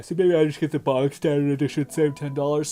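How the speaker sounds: yawning while talking. Deciding to buy the standard edition to save ten dollars, yawning while talking. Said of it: "Sorry for yawning so much".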